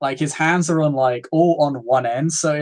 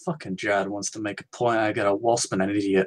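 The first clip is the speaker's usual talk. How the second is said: very low, under-the-breath muttering to oneself; 7 semitones lower, 7 dB quieter than usual. A game master voices a foe muttering to himself before marching on the player. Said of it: "He just kind of mutters to himself".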